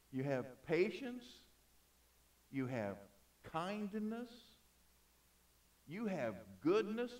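slow, drawn-out reading with long pauses. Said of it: "even though I'm reading slow".

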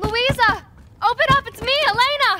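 very loud, high-pitched calling out. Calling to Luisa to open up and let her in, shouting. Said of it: "Stop shouting".

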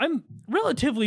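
voice cracking mid-word on "all". Talking in a group conversation, voice cracking. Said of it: "my voice just cracked".

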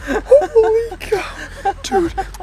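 very high, drawn-out, joyful squeal.

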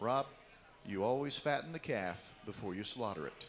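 play-acted dry expressionless deadpan, low pitch. Retelling what his coach told him, the speaker imitates a deadpan reply. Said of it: "deadpans it".

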